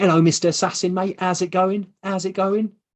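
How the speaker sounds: put-on matey wide boy market-trader voice. Imitating a man who thinks you're posh as he greets you, in a put-on market-trader voice. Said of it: "I think he sounds like he works on a market".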